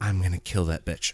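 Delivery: put-on out-of-breath mutter. Retelling a character running up and muttering: imitating out-of-breath muttering. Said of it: "She's out of breath".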